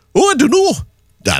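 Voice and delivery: put-on botched Geordie accent. Quoting what people say about Newcastle's season, attempted Geordie accent. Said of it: "that was meant to be a Geordie accent".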